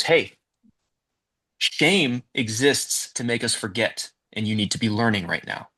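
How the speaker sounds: usual speaking voice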